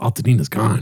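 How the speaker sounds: strange, weird, demonic-sounding voice. Retelling what his golfing partner said, in a weird demon voice. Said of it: "like weird voice, like demon voice".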